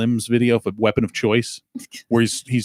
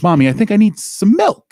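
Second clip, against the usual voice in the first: put-on very high, loud, sing-song clumsy child voice; 10 semitones higher, 6 dB louder than usual. Picturing the actor as a child in an old movie clip, bad Christopher Walken impression. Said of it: "I can't even do a good Christopher Walken impression".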